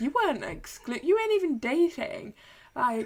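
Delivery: high, loud, indignant rant.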